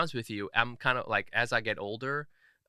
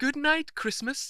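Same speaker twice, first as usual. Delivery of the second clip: put-on British accent, pitched very high. Imitating a son saying good night at bedtime: british accent. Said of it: "he has a British accent".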